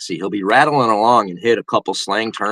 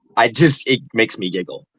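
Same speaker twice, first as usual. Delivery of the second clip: ordinary talk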